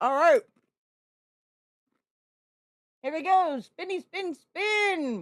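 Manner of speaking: talking with mouth full. Eating while speaking, about to spin, talking with mouth full. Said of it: "not sorry for my mouthful".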